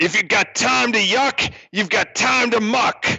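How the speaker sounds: growling voice. Voicing a character who growls at muckers slacking off, growling. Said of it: "he growls at them".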